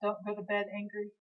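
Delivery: normal talking voice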